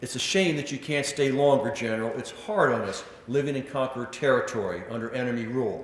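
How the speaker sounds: usual speaking voice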